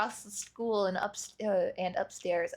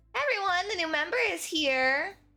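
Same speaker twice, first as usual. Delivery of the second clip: lively, high, energetic call-out, full of energy; 8 semitones higher than usual. Reading a game aloud, voicing Sayori as she enters: energetic Sayori voice. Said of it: "full of energy".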